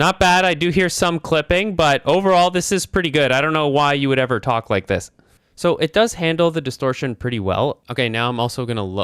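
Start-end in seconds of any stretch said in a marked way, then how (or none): 0.0-5.1 voice raised, speaking up loudly. Testing a microphone, raising the voice to see if it clips: raised voice. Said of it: "I'm going to raise my voice".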